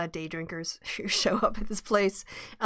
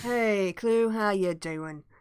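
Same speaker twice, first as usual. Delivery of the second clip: put-on broad London cockney accent, slipping in. Voicing a character greeting clue, speak in a cockney accent. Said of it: "he's too cockney".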